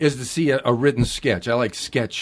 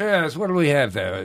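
put-on British accent in waiter style; 2 semitones higher than usual. Playing a waiter after being asked to: british waiter voice. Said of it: "could you be a British waiter?".

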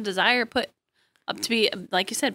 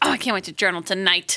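usual speaking voice

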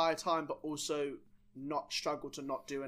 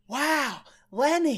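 put-on, very high, excited, wobbly accent, badly done; 10 semitones higher, 8 dB louder than usual. Retelling a friend's greeting at their first meeting: Regan impression. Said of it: "your Regan impression gets worse every episode".

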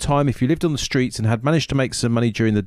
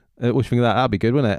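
ordinary talk, nothing marked

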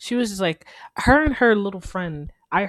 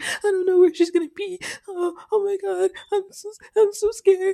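mock hysterical sobbing, much higher; 13 semitones higher than usual. Speaker retelling what a scared, crying friend said, imitating hysterical crying. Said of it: "She was like hysterical".

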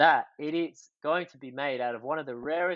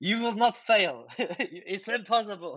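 put-on Swiss accent, pitched higher; 6 semitones higher than usual. Quoting a man who believes in the team, in a swiss accent. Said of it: "In his like Swiss accent".

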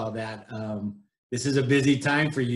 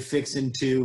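plain

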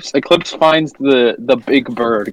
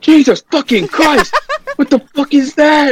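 put-on very high-pitched, shrill shouting; 3 dB louder than usual. Recapping a scene, the speaker acts out another character's reaction, mock-yelling as Eclipse. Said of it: "you're yelling".

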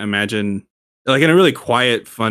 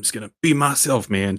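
put-on assertive tone; 3 dB quieter than usual. Retelling a wrestling segment, imitating an assertive Matt Riddle. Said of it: "Matt Riddle actually gets a little assertive".

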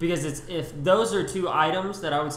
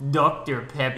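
bad, fake put-on Russian accent; 3 semitones lower than usual. Recalling an old video, quoting another person's line: bad Russian accent. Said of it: "he said in a Russian accent".

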